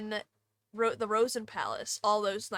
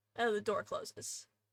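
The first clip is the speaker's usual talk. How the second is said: plain reading voice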